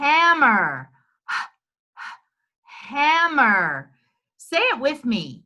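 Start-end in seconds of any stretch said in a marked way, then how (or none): 0.0-3.9 slow, stretched, sounded-out word, higher pitch. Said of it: "Stretch it out".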